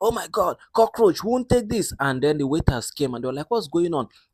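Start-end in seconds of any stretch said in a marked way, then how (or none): 0.0-1.9 very high-pitched, shrill shouting. Retelling how Latifah's assistant started shouting over the food, imitating the shout. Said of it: "she started shouting".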